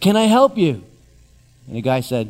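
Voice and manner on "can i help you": harried, brisk, all-business tone, pitched up. Retelling how a woman on a fake phone call greeted a visitor: imitating a very busy manner. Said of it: "in a very busy manner and said".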